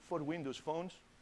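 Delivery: very quiet, hushed voice. Speaker telling the audience which phones an app supports, lowered voice. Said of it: "I'm also lowering my voice".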